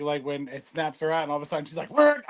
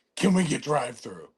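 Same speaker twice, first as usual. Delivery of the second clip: put-on movie monster voice; 3 semitones lower than usual. Retelling a navigation app line in a Venom voice. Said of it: "And Venom would say".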